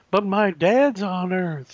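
very high, drawn-out, dragged whine. Joking about the film's plot, answering in a whiny Spock voice. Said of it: "That was my whiny Spock".

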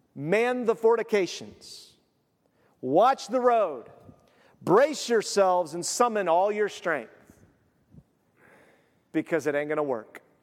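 mock prophet voice, dry and sarcastic. Quoting Nahum's warning to Nineveh: imitating a sarcastic prophet. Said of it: "And then sarcastically".

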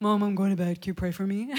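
deep, low put-on voice. A mother acts out her big son walking into the room to ask her, imitating a son's deep voice. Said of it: "walk into the room with this deep voice and be like".

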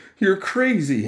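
very high, winded, gasping words. An official staggers out of a water trough, away from his attacker, gasping. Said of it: "he gasped".

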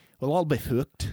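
put-on Irish accent. Showing a phrase learned to say in another accent: Irish accent. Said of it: "my Irish accent isn't strong".

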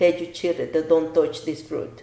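normal talking voice

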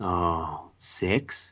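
as bored as possible, deadpan. Retelling a reply to a girl at a masquerade ball: retelling trying to sound bored. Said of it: "I tried to sound as bored as possible".

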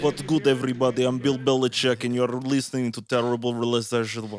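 put-on Russian accent. Introducing the podcast terrible realization to listeners, in a fake russian accent. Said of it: "Why is Bill Belichick Russian?".

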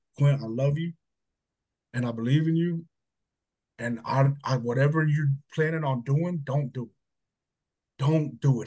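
put-on teary pleading voice, close to crying. Retelling what a man said to him while tearing up, imitating tearful pleading. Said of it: "he starts tearing up and he goes".

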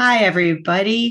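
very loud put-on 1950s sitcom housewife voice. On a podcast, the co-host greets everybody, sounding like a 1950s sitcom housewife. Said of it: "you sounded like a 1950s housewife from a sitcom".

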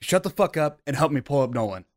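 ordinary talk

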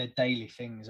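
ordinary talk, nothing marked

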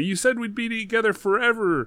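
put-on high, weepy, sobbing, tearful crying voice. Retelling a horror scene where a severed head talks to Ash: imitating Linda crying. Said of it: "starts talking to him like Linda would and starts crying".

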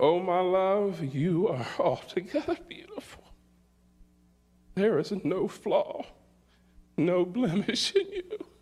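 voice choking up, near tears, slow, swooping. Speaker reads a bible verse recalling his wife on their wedding day: holding back tears. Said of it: "I'm trying not to cry".

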